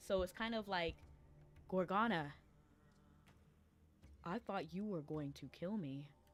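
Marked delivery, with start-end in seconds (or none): 1.7-6.1 flat monotone with long pauses between phrases. Imitating a character's voice acting, Perseus voice, flat with long pauses. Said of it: "sounds like monotone-ish and then pausing a lot".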